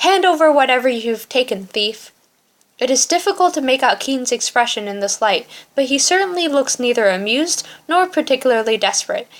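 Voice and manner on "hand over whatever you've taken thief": put-on spiteful, venomous, barking old man's voice. The old man confronts the thief: barking venomously. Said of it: "Then he is barking venomously".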